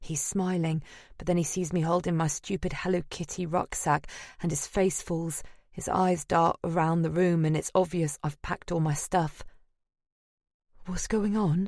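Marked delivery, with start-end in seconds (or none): 10.9-11.7 shaky, wavering, trembling, unsteady voice. Narrator reads a man's question on seeing the narrator packed to leave, shaky voice. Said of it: "he says in a shaky voice".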